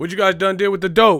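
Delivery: very loud, high hollering at full blast. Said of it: "why are you yelling and shit?".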